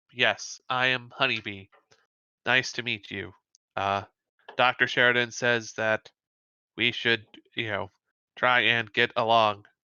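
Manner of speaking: low, flat, level monotone throughout. Retelling how she answered in character as Honeybee; Honeybee's monotone voice. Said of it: "She speaks in a very sort of monotone voice".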